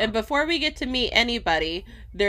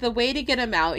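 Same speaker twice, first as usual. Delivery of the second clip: ordinary delivery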